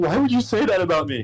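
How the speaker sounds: bawling, tearful, hurt crying voice. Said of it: "He is bawling his eyes out".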